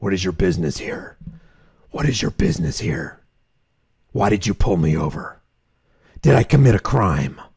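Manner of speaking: very deep, low, menacing and intimidating voice. Suggesting how to answer the officer who pulled you over: intimidating Batman voice. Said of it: "talk to him like Batman ... in a real intimidating voice".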